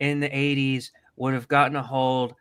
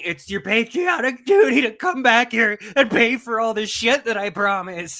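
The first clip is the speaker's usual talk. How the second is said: high, loud, imploring begging plea; 8 semitones higher, 5 dB louder than usual. Retelling a compilation clip of someone urging billionaires back: imitating begging.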